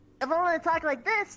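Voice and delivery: high, loud, small cartoon cat voice. The speaker shows off the small cat character everyone knows them for. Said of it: "this is basically me as my small character, the little cat".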